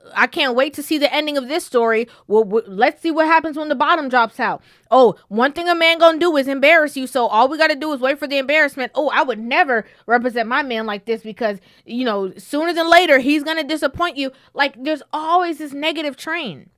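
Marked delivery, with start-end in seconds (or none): none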